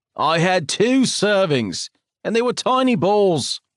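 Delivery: defensive, high-pitched tone. Reading a story aloud, the granddad answering a reproach: defensive. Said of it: "Edward says defensively".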